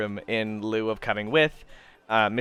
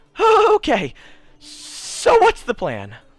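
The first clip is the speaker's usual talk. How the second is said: very high, swooping, drawn-out frightened voice; 9 dB louder than usual. Voicing Hito, who returns to the group and asks the plan: scared. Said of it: "he's infinitely more scared now".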